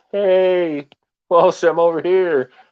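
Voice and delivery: slow callout with hey stretched, drawn out. Showing how he calls out to a teammate in-game, retelling his shouting. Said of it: "my comms are like more shouting".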